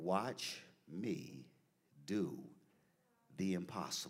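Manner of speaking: soft, faint, slow, still small voice. Retelling words heard while praying, soft small voice. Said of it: "just a beautiful small voice".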